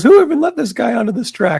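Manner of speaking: very high, riled-up, heated trash-talk tone. Retelling a driver's trash talk after being taken out: imitating someone talking heated trash. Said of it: "he's talking like that".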